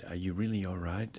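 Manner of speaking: soft, quiet, hushed half-whisper. Retelling what the police asked the man: imitating a half-whisper. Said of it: "the police whispered her da-".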